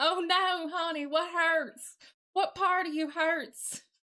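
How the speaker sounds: borrowed, put-on Southern American accent. Speaking to someone who says they're sick, in a put-on southern accent. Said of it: "I can't do nothing but a southern accent".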